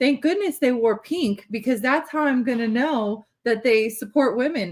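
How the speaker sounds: sarcastic, ironic, mocking tone. Commenting on lawmakers who wore pink: sarcastic. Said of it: "here's what I'm saying in, sarcastically".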